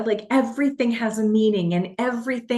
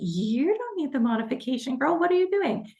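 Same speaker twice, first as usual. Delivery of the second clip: high, sensible shoulder-angel voice; 5 semitones higher, 4 dB quieter than usual. Retelling an inner debate during a workout: voicing the angel on her shoulder. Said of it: "the angel's like".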